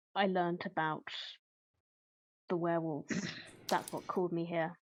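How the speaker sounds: hushed, very quiet, soft voice. In a tabletop roleplay scene, the character answers why she is here in a very quiet voice. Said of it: "keep the voice very quiet".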